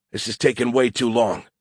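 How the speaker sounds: usual speaking voice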